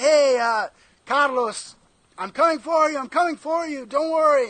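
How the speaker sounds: shrill, very loud, high-pitched hollering yell. Retelling calling out to a friend far off in the water: retelling own yell. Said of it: "I started, like, yelling".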